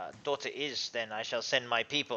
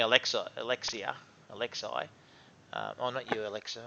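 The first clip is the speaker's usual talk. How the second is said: usual speaking voice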